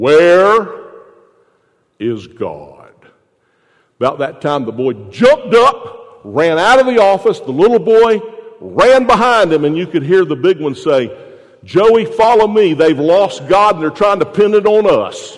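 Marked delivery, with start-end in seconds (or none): 0.0-2.9 deep, swooping preacher voice. Telling a joke, quoting the pastor questioning a boy, in a deep pastor voice. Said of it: "the pastor with his deep voice said".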